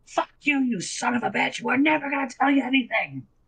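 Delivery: squeaky, very high, small goblin voice. Narrating a scene, the small goblin behind him speaks up, small goblin voice. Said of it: "you hear the small goblin from behind him go".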